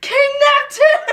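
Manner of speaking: very high, loud, screamed jeering. Retelling how friends taunted a bald girl in the hallway: imitating someone screaming. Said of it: "they would start screaming".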